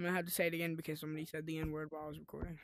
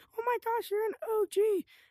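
put-on squeaky, very high, loud kid shouting; 7 dB louder than usual. Retelling what a kid said during a call: imitating a kid yelling. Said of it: "he was yelling like".

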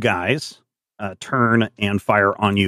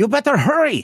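nervous, very high-pitched voice; 3 dB louder than usual. Voicing a character urging a woman on the gangplank to hurry: nervous urging. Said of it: "Lizelle looks nervously back at the woman".

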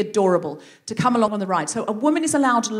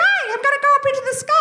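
very high, cartoon-style puppy voice. Describing a cartoon's dog characters, doing how Sky talks: Sky voice. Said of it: "this is how she talks".

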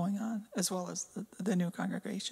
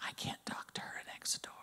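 put-on whisper, quieter. Retelling what an old neighbor said next door: imitating a neighbor whispering. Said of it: "and she started to whisper".

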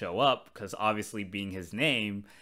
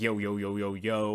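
mock street-thuggish attitude. Recalling Alpha 6 trying to be hip and cool, Alpha 6 street-thug attitude. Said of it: "with this kind of like street thuggish attitude".

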